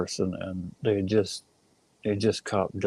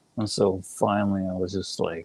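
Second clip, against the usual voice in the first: normal talking voice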